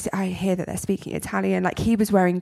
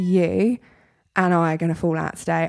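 ordinary talk

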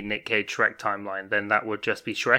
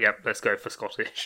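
ordinary talk

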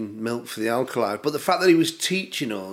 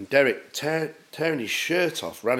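usual speaking voice

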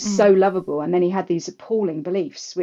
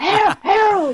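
put-on smoker's voice, much higher pitch; 14 semitones higher, 6 dB louder than usual. Correcting another's attempt at how she calls Harold, Madge calling Harold. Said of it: "It was more like".

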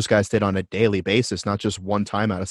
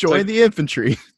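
put-on very high, old-timey 1950s tv commercial announcer voice; 10 semitones higher, 3 dB louder than usual. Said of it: "a nineteen fifties ti-, uh, style, uh, commercial".

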